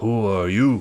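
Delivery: rough, very gruff voice. Narrating an encounter as players walk up, voicing them in a very gruff voice. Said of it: "they say in a very gruff voice".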